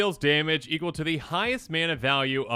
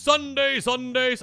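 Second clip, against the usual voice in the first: put-on announcer voice; 9 semitones higher than usual. Opening a Dominaria United spoiler season video, announcer voice. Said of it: "like announcer voice kind of thing".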